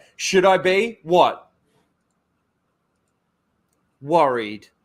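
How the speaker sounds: wooden, emotionless reading with long dead pauses. Repeating a show's dialogue to mock it, in a mock-monotone delivery. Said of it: "the dialogue just seems so monotone".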